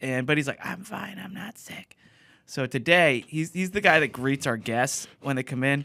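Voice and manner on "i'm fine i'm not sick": put-on very quiet, hushed, croaky, creaky old-man voice. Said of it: "he sounds like he's eighty now".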